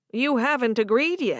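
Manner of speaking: ordinary delivery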